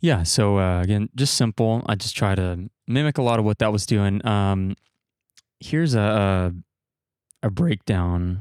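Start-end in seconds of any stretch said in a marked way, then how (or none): 5.6-8.4 voice cracking, slower. Walking listeners through a track, introducing the drum breakdown, voice cracking. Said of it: "Oops, my voice cracked".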